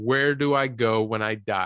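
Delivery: ordinary delivery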